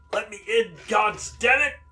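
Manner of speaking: very high-pitched, very loud angry yell. Voicing Banneker pounding outside a door: Banneker shouting to be let in. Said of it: "he says".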